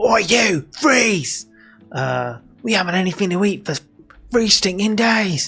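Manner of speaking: high, classic fantasy goblin voice. Narrating a game scene, voicing the goblins who attack, classic goblin voice. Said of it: "What's that goblin voice?".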